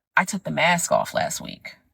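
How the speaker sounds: normal talking voice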